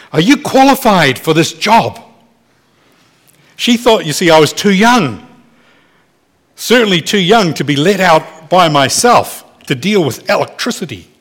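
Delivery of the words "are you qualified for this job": mock pointed, challenging, demanding tone. Recalling how the old lady of the house questioned him at nineteen, retelling a challenging tone. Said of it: "in a challenging tone of voice said".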